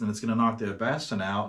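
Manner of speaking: normal talking voice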